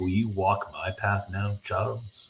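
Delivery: ordinary talk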